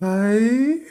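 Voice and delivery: soft, gentle voice. Retelling how gently Sloth picked it up: imitating Sloth's gentle voice. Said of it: "He picked it up so gentle".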